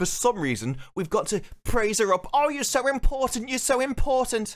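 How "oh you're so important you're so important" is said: very high, squeaky, gushing voice. Show reviewer praising the little girl who just screamed: squeaky voice. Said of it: "doing a squeaky voice".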